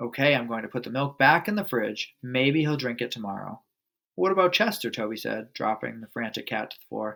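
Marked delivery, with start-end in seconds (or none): none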